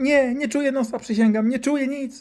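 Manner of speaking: put-on very high, loud panicked child's pleading.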